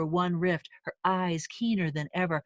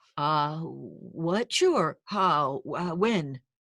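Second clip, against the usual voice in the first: stammering, cracking voice, much slower; 2 semitones lower than usual. Narrator reads his reply after Celeste asks him to come, stammering, voice cracking. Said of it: "he stammered, the combination of excitement and fear making his voice crack".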